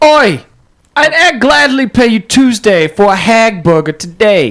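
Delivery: playful put-on British street urchin accent. Riffing on movie street urchins always being british, doing a put-on british accent. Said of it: "Now I want to do a British".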